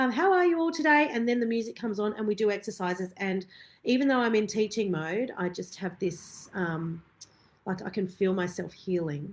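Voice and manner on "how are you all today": very high, put-on, fake cheerful bright voice. Retelling walking into the studio after crying: imitating own fake cheerful front. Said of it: "put on a fake kind of".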